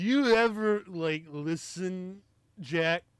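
put-on slow, heavy, drunken slurring with words running together. Reviewing a movie scene, speaker quotes it: Jeff Daniels drunk slurring impression. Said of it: "just starts really slurring".

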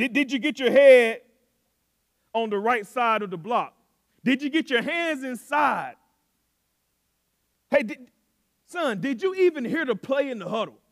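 high, loud, rapid-fire grilling tone.

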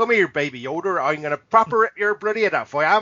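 put-on Bristol English accent. Discussing a man's regional accent, the speaker mimics it: put-on Bristol accent. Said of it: "It's all like Bristol".

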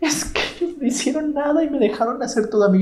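put-on sobbing, very high-pitched. Retelling a girl complaining to the teacher: imitating someone crying. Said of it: "con la maestra llorando".

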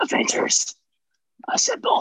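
quiet whisper under the breath, no yelling. Retelling how the Captain said the line in the movies, whispered. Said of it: "He didn't even yell it. He just whispered it".

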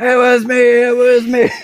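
very high, loud yell, stretched out slowly. Retelling Mike running down the hallway after a classmate: imitating someone yelling. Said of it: "you have Mike running down the hallway".

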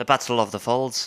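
put-on Irish accent drifting toward Scottish. Repeating a battle name as asked, in an irish accent that drifts scottish. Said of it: "Yours was a little Scottish".

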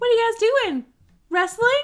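put-on very high, loud little kid voice. Imagining their younger self walking in on their brother: child voice. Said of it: "that's my child voice".

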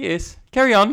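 put-on fancy voice. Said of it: "Sounds very fancy".

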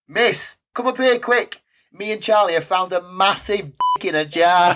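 high, loud, bellowing shout. Speaker retells a boy calling to her from a museum balcony, retelling a bellow. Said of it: "bellowing at me".

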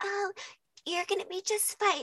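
put-on very high, syrupy sugary sweet voice. Retelling how a nurse spoke during labor: imitating a sugary sweet voice. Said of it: "she was talking so sweet to me".

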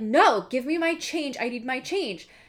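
high-pitched yell. Retelling how the boyfriend followed a man and yelled at him, retelling a yell. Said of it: "he's like yelling at him like".

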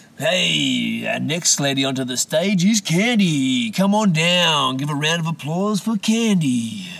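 weird, loud put-on club announcer, drawn-out hey. Speaker mocks the voice announcers put on: strip club announcer voice. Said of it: "the same voice you'd hear at a strip club".

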